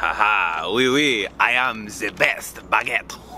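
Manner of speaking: fake French accent with drawn-out haha. Playing a healer character after a teammate's thanks: put-on French accent. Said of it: "Stop with the accents".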